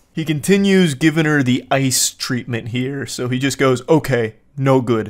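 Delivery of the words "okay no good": crude caveman-like speech. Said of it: "Actually speaking like a Neanderthal".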